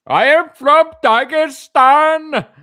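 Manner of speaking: put-on shrill, loud, high Indian accent. Imitating a viewer commenting they're from Dagestan, in an Indian accent. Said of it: "That's an Indian accent".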